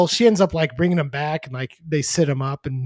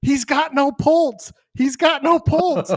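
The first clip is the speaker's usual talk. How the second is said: put-on frantic screaming, very high-pitched; 11 semitones higher than usual. Retelling a nurse doing CPR on a collapsed man, retelling a scream.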